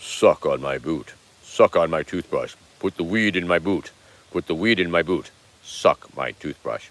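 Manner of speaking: very low, deep pipe-like voice. Voicing a severed head pipe that talks: really low talking-pipe voice. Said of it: "pipe talks really low like this".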